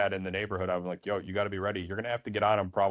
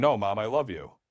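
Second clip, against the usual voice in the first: put-on five-year-old child screaming and yelling; 4 dB louder than usual. A father retells his five-year-old's reaction to losing movie night, imitating a child screaming. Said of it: "he starts screaming".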